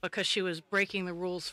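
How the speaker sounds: plain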